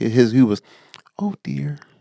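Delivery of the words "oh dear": small piglet character voice. Comparing cartoon voices, doing Piglet: quiet Piglet voice. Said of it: "where Piglet was really quiet".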